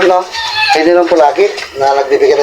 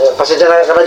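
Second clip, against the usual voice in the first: normal talking voice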